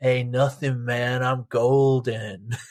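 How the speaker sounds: put-on slow, drunk, out-of-it drawl. Retelling the drunk guitar player's reply on stage: imitating drunk Tommy. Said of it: "he was so drunk, he couldn't play anything".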